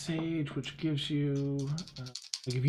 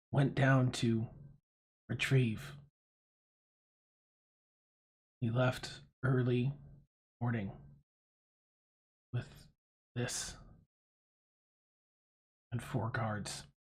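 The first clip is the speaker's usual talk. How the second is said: whispered, hushed, machine-like voice; 3 semitones lower, 5 dB quieter than usual. Voicing a character who leans toward the players, speak in a robotic whisper. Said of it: "he whispers it in a robotic voice".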